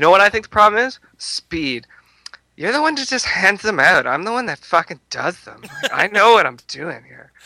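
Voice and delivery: very effeminate, high voice. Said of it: "super effeminate voice".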